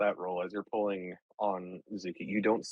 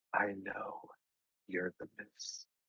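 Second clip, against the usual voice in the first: faint whisper, trailing and floating off; 9 dB quieter than usual. Narrator voicing a voice that floats past the listener's ear: whispery voice. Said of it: "that same whispery voice float past your ear".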